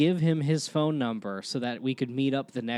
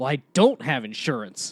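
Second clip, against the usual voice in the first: mock angry, indignant, furious tone; 3 dB louder than usual. Retelling clipping a man's car at eighteen, imitating a furious man. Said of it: "he- he's like furious".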